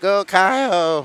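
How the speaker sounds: put-on cartoon voice with one word drawn out. Cheering a racer on during a race: Eric Cartman voice. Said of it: "In my best Eric Cartman voice".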